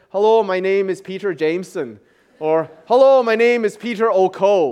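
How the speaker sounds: put-on, worked-at Irish accent. Explaining Scottish and Irish surnames, the speaker does a self-introduction in an Irish accent. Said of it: "Do you like my Irish accent?".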